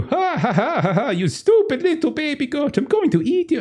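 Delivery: very high, taunting laughter through the words. Voicing a character who laughs at a goat he will eat: mocking laugh while talking. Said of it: "kinda laughing at you".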